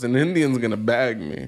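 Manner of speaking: ordinary delivery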